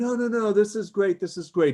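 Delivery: fake condescending glad-handing. Imitating someone glad-handing you with faint praise: imitating condescending tone. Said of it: "glad handing you and saying".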